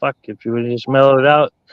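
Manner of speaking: ordinary delivery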